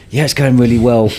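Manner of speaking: acted speaking through gritted teeth. Acting out a reply to parents asking how it's going: imitating speaking through gritted teeth. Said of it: "you're gritting through your teeth like".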